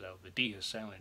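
ordinary talk, nothing marked

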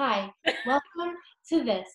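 TV shopping presenter, infomercial host delivery. A speaker shows how she opens her coffee videos, infomercial host voice. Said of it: "like an infomercial".

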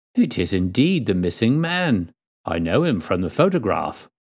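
ordinary delivery

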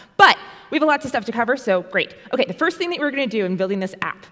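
talking really fast, rattled off. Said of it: "I'm going to start talking really, really, really, really fast".

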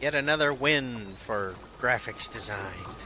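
ordinary talk, nothing marked

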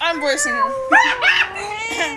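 high, slow, wailing character voice.

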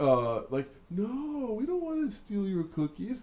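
mock sarcastic tone. Describing a scene, the speaker acts out a man answering an old woman, mock-sarcastic denial. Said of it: "the delivery is, like, so sarcastic".

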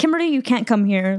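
plain

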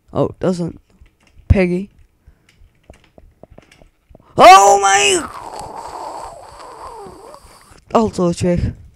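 angry, very high-pitched, drawn out. Reacting while playing a game as things go wrong again, angry. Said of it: "nu ben ik boos".

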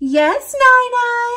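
high-pitched voice. Narrating a story, the dragon answers grandma's knock at the door, high-pitched voice. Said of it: "said Dragon in a high-pitched voice".

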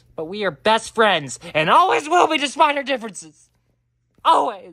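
full-on loud, high-pitched shouting. In a scene, a character speaks to another character, shouting. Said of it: "I don't know why I'm shouting at you".

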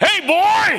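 sudden, high, shrill, loud yell. Retelling how Angelo yelled across a silent room: imitating Angelo yelling. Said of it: "and then he yelled".

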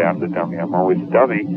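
normal talking voice

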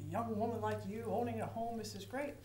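ordinary talk, nothing marked

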